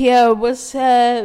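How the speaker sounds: put-on slow, loud, slurred drunk twelve-year-old voice.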